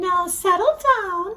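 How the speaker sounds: sweet, high-pitched classroom teacher voice. Reading a story aloud, the teacher telling her class to settle down, Miss Nelson's sweet voice. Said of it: "Miss Nelson said in a sweet voice".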